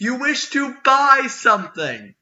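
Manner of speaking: booming, very high-pitched woman's yell. In a role-play game, a character questions the visitors in a booming female voice yell. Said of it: "a booming female voice yell".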